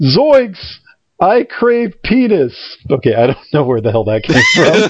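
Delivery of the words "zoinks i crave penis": high-pitched, very drawn-out, very slow cartoon voice. Retelling a made-up cartoon scene, the speaker does a Shaggy impression. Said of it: "Shaggy's like".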